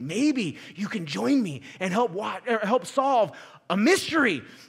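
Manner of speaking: really scary, frightening mystery host voice. Imitate how he always began the introduction to a nerve-wracking show, in a really scary voice. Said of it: "with his really scary voice".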